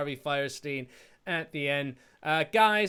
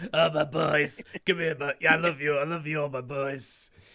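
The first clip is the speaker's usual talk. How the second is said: put-on voice like a drunk maniac. Doing the impression of a character, like a drunk maniac. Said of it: "He sounds like the maniac from It's Always Sunny".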